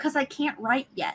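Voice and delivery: soft, hushed little voice. Retelling a small child's confession: imitating a child half-whispering. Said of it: "she, like, whispered it".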